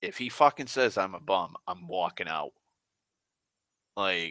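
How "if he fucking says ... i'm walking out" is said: plain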